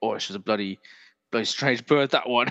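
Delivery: put-on English accent, laid on thick. Doing a Roy Kent impression of the same phrase: Roy Kent voice. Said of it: "Or like Roy Kent".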